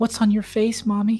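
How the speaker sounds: put-on very high, trembling, quivering little child's voice. A narrator tells of a voice under the bed asking: quivering child's voice. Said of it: "you hear a child's voice asking".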